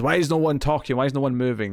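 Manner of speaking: mock frantic, agitated, freaked-out outburst. Retelling a show scene where a character freaks out: imitating a freaked-out demand. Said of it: "he kinda just freaks out and demands".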